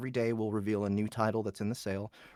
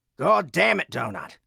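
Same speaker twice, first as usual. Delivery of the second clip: loud, high, shouted Australian accent; 7 semitones higher, 9 dB louder than usual. Performing a requested line in character as Florin: Florin's Australian accent. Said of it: "only because of the Australian accent".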